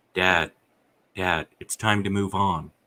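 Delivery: normal talking voice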